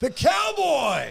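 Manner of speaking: play-acted, very high-pitched, rasping, rough announcer yell. Retelling how a Sonics announcer would call a player: Kevin Calabro yelling. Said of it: "would yell".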